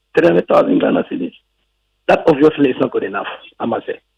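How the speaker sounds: fast delivery, voice close to tears. A guest finishing his point before the host stops him, on the verge of tears. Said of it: "sounds like you're about to cry".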